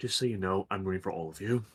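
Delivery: low, quiet mutter under the breath. Narrator voices a character who looks around, then speaks to the group: muttered. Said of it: "she looks around and mutters".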